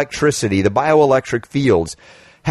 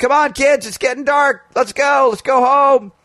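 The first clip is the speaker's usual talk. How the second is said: acted-out shouting, much higher in pitch; 12 semitones higher than usual. Telling a story about calling the kids home from the playground, retelling a yell. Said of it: "I'm yelling".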